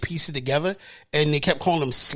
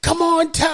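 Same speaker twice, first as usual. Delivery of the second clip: put-on shrieking scream, very high-pitched and loud; 13 semitones higher, 5 dB louder than usual. Retelling a reaction to a TV episode: imitating screaming at the TV. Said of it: "I was screaming at the T V".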